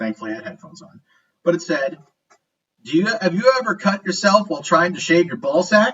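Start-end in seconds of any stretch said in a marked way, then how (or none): 2.8-5.9 blaring, very loud commercial announcer voice. Retelling a YouTube ad for male grooming products, very loud ad voice. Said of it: "it says in a very loud voice".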